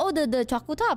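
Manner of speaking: plain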